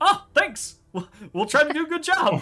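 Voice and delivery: oddly chipper, cheerful voice. Voicing Hawk thanking the players who wished him luck: oddly chipper Hawk. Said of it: "Hawk is oddly chipper about it".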